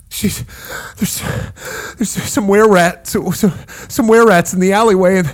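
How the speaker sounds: flustered, heavy breathing. A wounded man explains to the adventurers why he needs help, flustered and breathing heavily. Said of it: "and a flustered man flies through. He looks like he's covered in blood or wounded, and he's sitting there breathing heavily".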